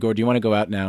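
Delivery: ordinary delivery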